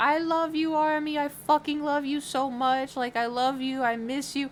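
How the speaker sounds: mock very drunk delivery. Retelling what someone said while very drunk, imitating a very drunk person. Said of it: "like so drunk and was like".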